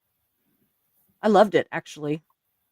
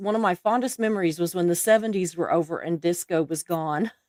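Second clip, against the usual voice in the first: plain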